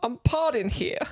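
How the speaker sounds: New York accent, pitched very high. Joking about squatters' rights, saying the line like a New Yorker would. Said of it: "like a New Yorker would".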